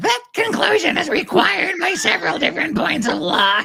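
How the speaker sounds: very high, grating, nails-on-chalkboard witchy voice. Imitating another person's impression of a voice reading a legal line: impression of an impression of Megan Fox. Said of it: "my impression of the other person's impression".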